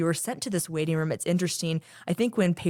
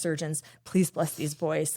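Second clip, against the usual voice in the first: acted, pleading, prayer-like delivery. Recalling stopping to pray in a corner, retelling a pleading prayer.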